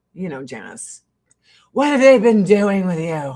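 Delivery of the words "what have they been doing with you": loud, confrontational, in-your-face delivery. Retelling a pushy question asked during a TV show: Janice Dickinson in-your-face impression. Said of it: "Like, in my face".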